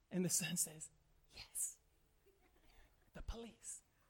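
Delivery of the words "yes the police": put-on barely voiced, hushed child's whisper. Retelling a story where a son answers the phone: imitating a child whispering. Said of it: "He's whispering".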